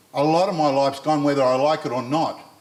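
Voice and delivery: ordinary talk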